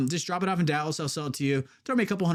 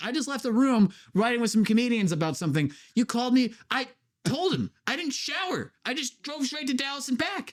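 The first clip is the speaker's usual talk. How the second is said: angry, fed-up outburst, pitched up; 8 semitones higher than usual. Retelling an argument after being told they smell ripe, reenacting own angry rant. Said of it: "I got so pissed off".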